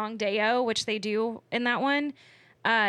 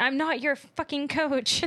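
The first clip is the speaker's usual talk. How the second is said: put-on annoyed grown-up voice, higher pitch; 4 semitones higher than usual. Acting out Juno snapping at the football players: imitating annoyed Juno. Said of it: "annoyed like they're toddlers".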